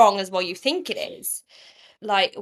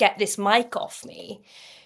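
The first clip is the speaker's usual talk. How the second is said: put-on annoyed, demanding voice. Retelling what Sophie said when she came in: imitating annoyed Sophie. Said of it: "she's actually getting annoyed".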